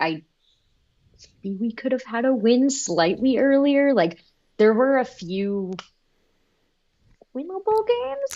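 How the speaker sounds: small, high-pitched, timid, wavering little voice. Speaker discussing the team's season, in a high-pitched little timid voice. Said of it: "I say that in the most high-pitched little timid voice".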